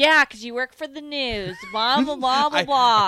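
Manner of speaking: all worked up, heated, loud and dismissive. Retelling what Nick said when asked about verification: imitating Nick sounding heated. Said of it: "I did not sound like that when I said it".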